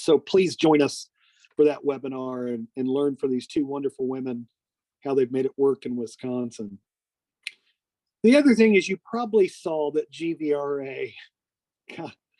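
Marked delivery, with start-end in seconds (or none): 8.9-12.1 speech breaking into laughter. Announcing webinar news to listeners, laughing while talking. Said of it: "I'm sorry, I'm laughing".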